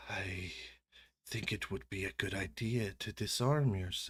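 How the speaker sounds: snakelike voice hissing through the words. As game master, voicing the Yuan-Ti speaking to a player, in a hissed voice. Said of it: "in her hissed voice".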